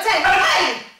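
full-force, very loud, high, booming karate kiai shout. Counting punches for a karate class, on ten: kiai shout.

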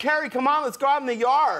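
put-on kid-like American California accent. A dad imitates his kid asking to go outside: imitating son's California accent. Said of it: "he has an American accent, he has a California accent".

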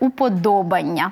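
уподобання pronounced with stress on до. Explaining an exception to the ання stress pattern: уподобання stressed on до. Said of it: "Не на «Анню», так, а на третій склад".

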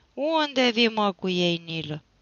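loud, drawn-out, jeering, taunting tone. Moromete, getting up, calls to his son Nilă coming back with the horses, mockingly. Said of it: "Îl întrebă batjocoritor".

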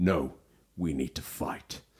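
dramatic, deep, slow movie trailer voice. Retelling a game trailer to listeners, doing a trailer voice impression. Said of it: "That's a great impression".

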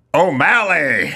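slow, drawn-out bad Irish accent.

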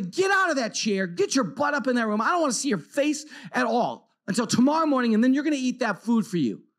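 acted, angry, fed-up parent voice. Speaker re-enacts what they said to him at their snapping point, retelling an angry outburst. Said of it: "Now I blow my stack".

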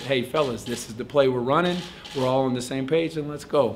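ordinary talk, nothing marked

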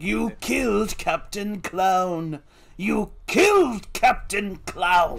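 slow, drawn-out cartoon villain voice. Retelling a cartoon scene where a robot lackey is destroyed: imitating the Joker. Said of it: "And Joker's just like".

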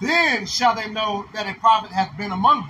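ordinary talk

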